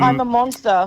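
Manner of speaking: usual speaking voice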